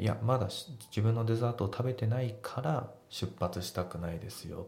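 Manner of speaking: ordinary talk, nothing marked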